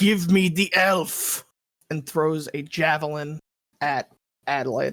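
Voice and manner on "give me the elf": slow, drawn-out yelled battle cry. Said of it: "Bugbear that you recognize yells out".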